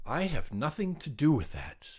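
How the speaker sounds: ordinary delivery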